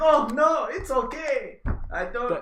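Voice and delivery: put-on, very high, very slow German accent. Playing German after announcing an accent change, attempted German accent. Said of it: "and I'm gonna change my accent".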